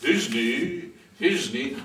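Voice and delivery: tiny, low, put-on monstrous voice. Asking to play another role in the play, the actor uses a monstrous little voice. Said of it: "I speak in a monstrous little voice".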